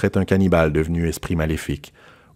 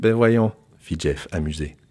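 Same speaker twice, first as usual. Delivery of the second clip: ordinary delivery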